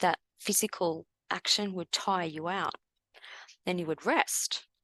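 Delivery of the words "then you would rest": leaning into the word rest. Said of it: "emphasis on the word rest".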